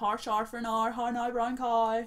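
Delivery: put-on Northern Irish accent.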